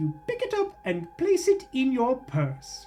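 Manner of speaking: British narrator voice. Quoting a game's recurring narrator line about picking up an item, British narrator voice. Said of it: "this like British narrator voice goes like".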